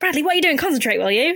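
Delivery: sudden, high-pitched shout. Retelling a scene where a character scolds another: imitating someone shouting. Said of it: "just shouting at him".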